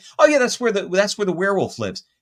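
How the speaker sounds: put-on nonchalant, offhand tone. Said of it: "very nonchalant".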